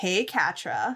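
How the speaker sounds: mocking, taunting voice, called out loudly. Retelling a scene where an off-screen voice calls out: imitating a taunting call. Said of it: "a taunting voice from off screen that calls out".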